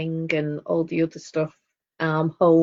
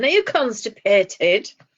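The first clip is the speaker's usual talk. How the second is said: loud, pitched-up put-on voice; 5 semitones higher, 4 dB louder than usual. Telling the other speaker what her mum would say; imitating mum's loud voice. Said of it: "in a loud voice now she'd be saying".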